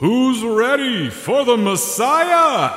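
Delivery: big-show announcer voice, very high and slow. Retelling a scene where the announcer finally speaks to the crowd, in an announcer voice. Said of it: "that's how announcers talk".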